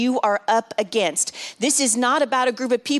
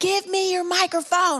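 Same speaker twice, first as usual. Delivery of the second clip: high, stretched-out, drawn-out scream; 8 semitones higher than usual. Retelling a woman rushing the stage, imitating a woman screaming. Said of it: "She was screaming at me".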